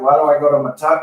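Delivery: ordinary delivery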